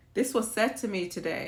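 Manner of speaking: plain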